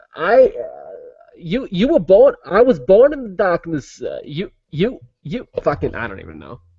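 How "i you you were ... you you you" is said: high, swooping, wildly swinging pitch, movie-villain voice. Doing an impression mixing two figures: Christopher Walken as Bane. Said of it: "I'm gonna do Christopher Walken Bane".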